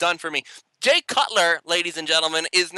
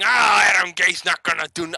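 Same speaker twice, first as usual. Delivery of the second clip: put-on raging, angry, griping complaining fan voice. Mocking fans who complain about the new coach: imitating angry complaining fans. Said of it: "raging and complaining".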